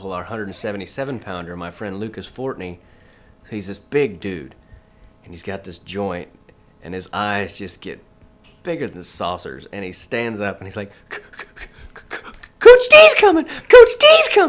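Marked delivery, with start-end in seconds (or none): 11.1-14.5 put-on little-girl voice, much higher, louder, slower. Retelling what a friend said when he saw the wrestling coach, [name]'s little-girl voice. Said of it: "He sounded like a little girl".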